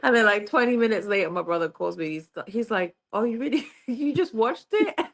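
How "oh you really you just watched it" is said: high voice laughing through words, crying with laughter. Retelling a brother's prank phone call: imitating someone laughing while talking. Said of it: "He just was crying, laughing".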